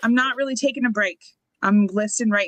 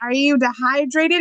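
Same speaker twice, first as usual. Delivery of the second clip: sarcastic jab with pitch rising up; 5 semitones higher than usual. Retelling what the husband asked after a morning leg cramp, imitating sarcastic husband. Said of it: "he said it really sarcastically".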